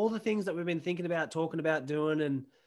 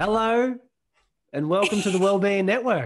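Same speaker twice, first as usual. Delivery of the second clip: very loud, half-robot announcer voice; 4 semitones higher, 10 dB louder than usual. Opening the show with a welcome, in a somewhat robotic voice. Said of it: "thought you were going to do the full robot voice".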